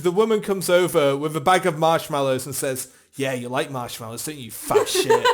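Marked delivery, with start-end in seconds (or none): 3.1-5.3 put-on flirty teasing tone, lower pitch. Telling a joke, voicing the woman with the marshmallows, mock-flirtatious taunt. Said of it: "flirtatiously with food".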